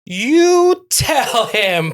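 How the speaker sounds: excited, high, slow and loud.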